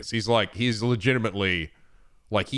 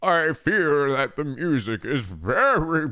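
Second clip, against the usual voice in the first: put-on elderly man's voice, high, drawn out; 6 semitones higher, 3 dB louder than usual. Mocking the narration you just heard by repeating it in a put-on old man voice. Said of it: "That's like my old man voice I give to people".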